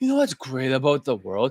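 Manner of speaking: mopey, depressed put-on voice, sighing through words. Showing how someone sounds when talking like a poor person: sighing depressed voice. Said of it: "always giving a sigh".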